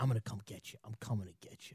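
barely audible, hushed, flat whisper. Retelling a report about Belichick, imitating Belichick whispering. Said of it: "Belichick whispering".

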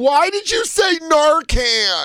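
sobbing, very high, slow and drawn out, tearful. Retelling how a woman came backstage, imitating a woman crying. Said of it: "came backstage crying, going".

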